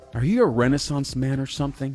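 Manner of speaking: put-on patronizing, talking-down tone. Retelling what an acquaintance said in the cafeteria: imitating a condescending tone. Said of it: "in a condescending way".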